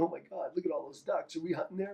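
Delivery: men mock-giggling like schoolgirls, giggly excitement. Retelling how hunters reacted on seeing the ducks: imitating hunters giggling like schoolgirls. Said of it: "grown men giggling like schoolgirls".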